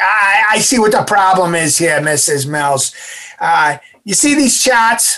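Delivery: put-on loud, nasally New England accent. Retelling what a lung doctor said to the mother: nasal New England accent. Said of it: "he talked in a nasally kind of New England accent".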